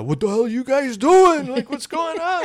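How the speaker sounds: very high-pitched, rising yell. Retelling how the older newspaper director reacted: imitating someone yelling. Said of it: "he started yelling at us".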